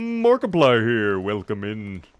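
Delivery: drawn-out, showy host-style delivery, words stretched long. Unsure he can pull it off, the speaker tries a Markiplier impression. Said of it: "I don't know if I can do a good Markiplier".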